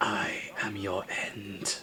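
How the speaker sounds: eerie, very hushed ghostly whisper. A game master voicing an unfamiliar voice carried on the wind, in a whisper. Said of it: "an unfamiliar voice whisper".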